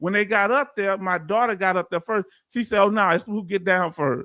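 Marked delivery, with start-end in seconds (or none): none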